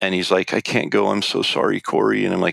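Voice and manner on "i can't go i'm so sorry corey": put-on crying voice. Retelling a tent-mate's apology for being unable to go: imitating someone crying. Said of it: "he's literally in tears crying".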